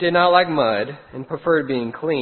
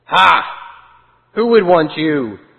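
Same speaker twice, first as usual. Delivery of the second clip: big, loud snarling voice; 6 dB louder than usual. Reading a story, a voice from behind taunts the little sheep: big snarling voice. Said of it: "said a big snarling voice".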